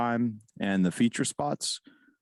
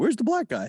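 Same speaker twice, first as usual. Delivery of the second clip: very high-pitched cartoon dog voice; 12 semitones higher than usual. Retelling what someone said at a show, in a Scooby-Doo voice. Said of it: "doing his Scooby-Doo thing where he's like".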